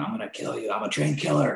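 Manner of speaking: ragged, creaky, high-pitched, rough screaming. Retelling what a guy was screaming: imitating someone screaming. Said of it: "this guy was screaming".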